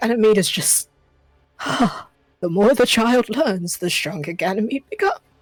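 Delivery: musing out loud, talking to himself. Voicing Noir at the fire looking at a list: Noir talking to himself. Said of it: "Noir's just talking to himself".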